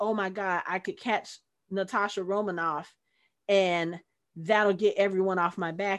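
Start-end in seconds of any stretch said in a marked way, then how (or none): none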